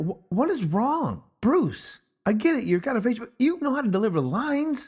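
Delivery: exasperated pleading tone. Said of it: "just kinda like".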